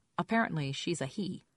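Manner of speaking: ordinary talk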